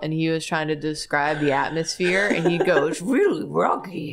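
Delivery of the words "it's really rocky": cartoon dog voice, foggy, barked out. Imagining a YouTuber describing Silent Hill: Scooby-Doo voice. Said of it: "if Scooby-Doo was a YouTuber".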